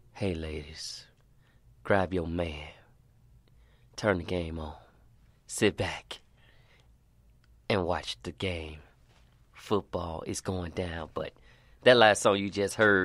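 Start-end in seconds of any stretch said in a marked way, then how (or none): 0.1-11.0 deep, low voice, lower and quieter. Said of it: "What's wrong with the deep voice?".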